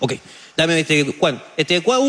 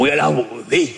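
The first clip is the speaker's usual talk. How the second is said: deeper, changed voice mimicking a tone. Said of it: "¿Por qué con ese tono?".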